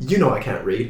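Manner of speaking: put-on British-accented delivery. Retelling a lemur speaking to a priest, in a British voice. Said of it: "in a British voice just says".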